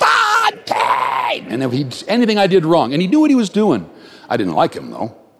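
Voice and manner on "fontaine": mock high, rough football coach scream. Recalling an old football coach screaming the speaker's name, imitating a coach screaming. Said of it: "I can still hear his voice go just echo across".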